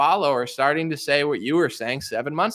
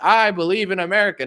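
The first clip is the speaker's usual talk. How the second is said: forceful, powerful strongman voice; 4 semitones higher, 4 dB louder than usual. Describing how Trump used to talk, Trump strong-man voice. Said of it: "He used to talk like a strong man".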